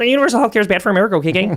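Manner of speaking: frog puppet character voice. Doing a mashup of masculine voices: Kermit voice. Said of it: "sounds like Kermit in nineteen eighty-six".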